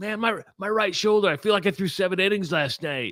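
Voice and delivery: put-on whining, petulant, whiny little voice. Mimicking the listener to their face, mock-whiny imitation. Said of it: "you did it in like a whiny little bitchy voice".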